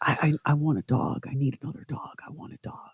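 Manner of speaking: muttering under breath. Retelling what a man kept repeating to himself, mumbling under his breath. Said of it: "mumbling under his breath".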